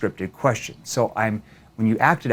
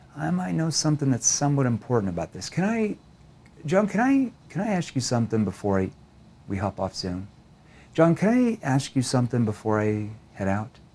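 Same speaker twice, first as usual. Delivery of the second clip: lowered, caring, concerned, empathetic tone; 2 semitones higher, 4 dB quieter than usual. Demonstrating how to ask someone a question before leaving a zoom call, in a concerned, empathetic tone. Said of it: "Notice my tone shifts down into what? Kind of a concerned tone".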